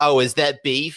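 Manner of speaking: high, loud, whiny nasal complaining voice. Imitating a character from an episode: imitating a whiny nasal voice. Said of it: "he says it in a whiny nasally voice like".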